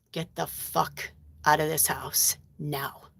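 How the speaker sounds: hushed, breathy, whispered under-breath mutter. Retelling what the speaker said under their breath in a house: retelling an under-breath mutter. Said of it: "like under my breath".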